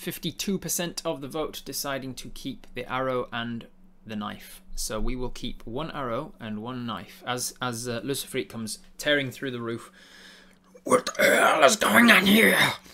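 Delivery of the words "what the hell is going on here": snarling demon voice, very high and very loud. Narrating a story as Lucifreet tears through the roof, Lucifreet snarling. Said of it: "He snarls".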